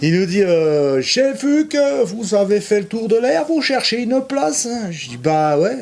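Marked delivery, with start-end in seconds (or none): 1.0-4.9 put-on accent from Alsace. Retelling what an Alsatian man told them, in an imitated Alsatian accent. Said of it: "je fais peut-être pas bien l'accent alsacien, je sais pas, mais bon, je vais essayer quand même".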